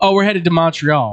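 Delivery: ordinary delivery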